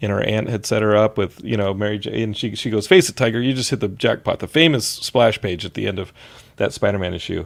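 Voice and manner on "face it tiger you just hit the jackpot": ordinary talk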